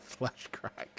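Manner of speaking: put-on childlike, uncontrollable giggling.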